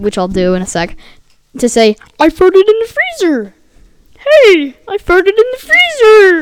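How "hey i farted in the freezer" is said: croaky frog-like put-on voice, much higher, slower. Retelling a moment at grandma's freezer, the speaker demonstrates a croaky frog-like put-on voice. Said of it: "You sound like a mixture of Kermit and".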